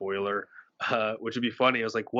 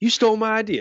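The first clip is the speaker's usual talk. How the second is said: mock accusing voice, blurted out high and loud. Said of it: "he's like".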